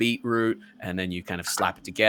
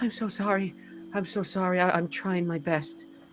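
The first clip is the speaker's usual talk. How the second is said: stammering in a very high voice; 10 semitones higher, 3 dB quieter than usual. Voicing a character who dives under a counter and apologizes: voicing Little Green apologizing. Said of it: "He looks up and goes".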